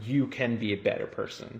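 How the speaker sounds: plain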